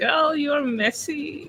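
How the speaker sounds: high voice, talking through laughter. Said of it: "I'm laughing right now first".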